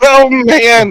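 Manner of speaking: very high exclamation with laughter breaking through. Reacting to news of a race disqualification, laughing while talking. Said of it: "don't mean to laugh".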